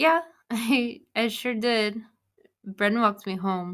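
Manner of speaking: jittery, nervous, halting, stumbling delivery. On a phone call, a character answers the caller's check-in, nervous. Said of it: "You sound nervous".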